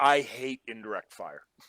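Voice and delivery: low, grumbling, complaining tone. Voicing a wounded character who just woke up coughing: grumbling. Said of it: "and grumbles".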